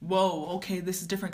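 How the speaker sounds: ordinary talk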